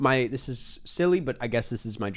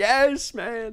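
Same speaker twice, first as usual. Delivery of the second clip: mock joyful, thrilled outburst, pitched very high; 10 semitones higher than usual. Speaker recalling their reaction to seeing a movie trailer: retelling excited outburst. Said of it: "I got so excited".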